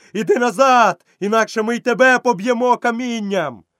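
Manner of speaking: shrill, very high roar like a mob. Narrating the crowd's line in a story, roared. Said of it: "заревів натовп".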